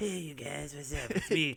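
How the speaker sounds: put-on cartoon kid voice. Greeting the group in a put-on voice that sounds like Cartman. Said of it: "What is that, Cartman?".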